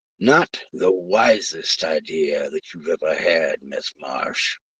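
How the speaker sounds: slow, drawn-out snarling delivery. Narrator voices a man threatening Miss Marsh, snarling. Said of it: "he snarled".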